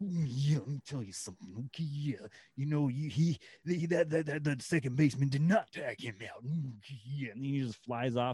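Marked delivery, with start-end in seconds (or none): 0.0-7.3 mild, half-yelled ranting. Imagining him as a manager yelling at an umpire: imitating Macho Man yelling. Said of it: "yelling at an umpire, like".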